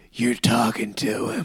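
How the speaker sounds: gruff put-on voice. Retelling a story's plot, the speaker quotes the president in a gruff accent. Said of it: "the president did talk with that gruff accent".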